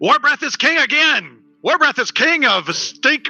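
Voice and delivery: shouting in a dim-witted, dumb-sounding voice. Voicing a character calling out to a camp: shouting in a dim-witted voice. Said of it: "Clavius will shout".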